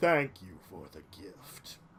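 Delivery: odd, very deep, low creature voice. Voicing a creature that thanks the party for the gift: strange creature voice. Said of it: "as you'll hear from this strange voice".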